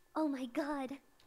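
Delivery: put-on horrified, shocked popular girl voice. Voicing the popular girl who just witnessed a dead body: horrified popular girl. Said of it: "she just witnessed a dead body".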